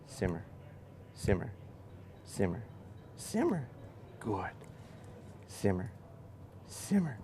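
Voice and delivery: soft, very quiet, breathy, coaxing whispered murmur. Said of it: "I'm gonna be real quiet when I set this dog down".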